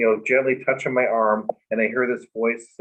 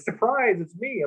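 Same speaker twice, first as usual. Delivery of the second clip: mock, very high, thrilled, excited surprise; 11 semitones higher than usual. Retelling a visitor's surprise greeting: imitating someone excited. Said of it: "And she was so excited, like".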